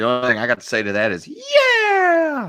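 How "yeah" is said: very high, drawn-out, stretched cheering yell. Cheering on a joke to another speaker: kid riding Falkor yelling voice. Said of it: "my kid writing fucking Falcor voice".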